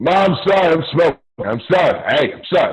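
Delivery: loud, high-pitched, hurried delivery.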